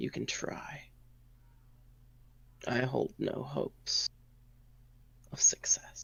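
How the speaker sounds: soft, grudging, near-voiceless whisper under the breath.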